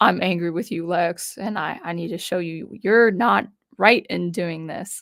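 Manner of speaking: ordinary talk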